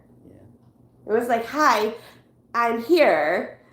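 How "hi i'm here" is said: rising, question-like tone. Recalling a moment that scared her, speaker repeats what they said in a questioning tone. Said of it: "a questioning tone".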